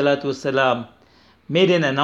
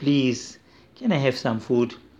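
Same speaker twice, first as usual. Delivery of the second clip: put-on humble pleading, quieter, slower; 3 semitones lower, 5 dB quieter than usual. Speaker telling a story, showing how someone in need should ask, acting out a humble plea. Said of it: "you have some kind of humility in your action and in your tone".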